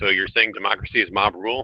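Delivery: normal talking voice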